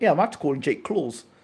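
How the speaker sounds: usual speaking voice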